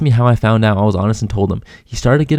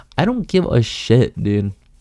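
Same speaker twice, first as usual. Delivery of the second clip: ordinary delivery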